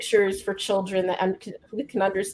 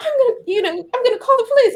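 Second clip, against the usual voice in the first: shrill, very high put-on voice; 4 dB louder than usual. Retelling how a son mocks the woman on the video: shrill mocking Amy Cooper voice. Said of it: "he puts this shrill in her, in his voice".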